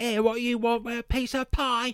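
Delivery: very high, loud, over-the-top exaggerated Cockney accent. Mocking the accents in a film set in Victorian Britain: mock Cockney accent. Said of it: "They were Cockneys".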